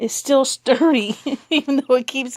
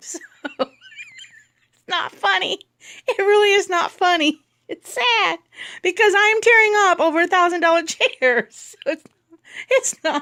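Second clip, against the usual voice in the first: talking through laughter, higher; 7 semitones higher than usual. Speaker telling about pulling apart a chair, laughing while talking. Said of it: "I don't know why I'm laughing".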